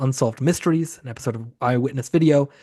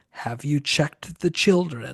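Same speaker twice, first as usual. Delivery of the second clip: sinister, creepy voice; 4 dB quieter than usual. Retelling the phone calls in a horror film: imitating a creepy caller voice. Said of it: "it's just the creepy voice saying".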